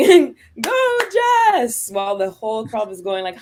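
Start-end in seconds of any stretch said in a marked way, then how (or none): 0.0-1.9 screamed cheer, higher and louder. Retelling cheering against the whole crowd at a match: imitating screaming a cheer. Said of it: "just me screaming".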